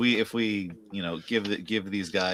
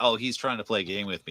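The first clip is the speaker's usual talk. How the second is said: usual speaking voice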